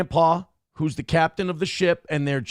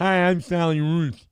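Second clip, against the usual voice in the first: teasing, mocking, very slow, drawn-out put-on voice. Retelling how middle schoolers made fun of a deaf lady's voice: imitating Sally Ruth's voice. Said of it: "make fun of her voice".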